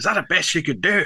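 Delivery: put-on high-pitched Glaswegian accent. Voicing old Chalk after the bathhouse crumbles to dust, in Billy Connolly's Scottish accent. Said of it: "I got him in Billy Connolly's Scottish accent".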